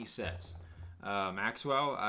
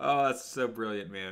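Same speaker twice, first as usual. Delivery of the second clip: ordinary delivery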